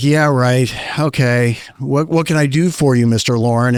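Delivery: mock, very condescending, dismissive tone. A speaker retells his dad answering a suspected prank call, mock-condescending. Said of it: "In a very condescending kind of way".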